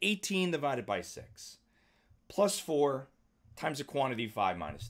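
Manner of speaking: halting phrases broken by brief pauses. Reading a math expression aloud, not in one breath: short pauses between phrases. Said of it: "I don't say it in like one breath. ... Like I give myself a break".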